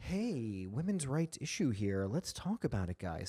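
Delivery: very quiet, low, gentle broadcaster tone. Describing how a group talks, doing a mock soft tone of voice. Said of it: "Soft tone of voice".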